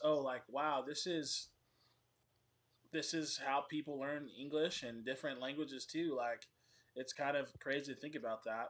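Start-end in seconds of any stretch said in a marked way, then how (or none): none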